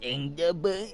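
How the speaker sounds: grating put-on voice. Explaining how they came up with the bus line, in an annoying voice. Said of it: "it's this annoying voice like".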